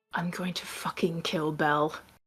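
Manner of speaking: muttered quietly under the breath. Voicing a character who threatens another at the game's end: muttered under his breath. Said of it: "Dagon says under his breath".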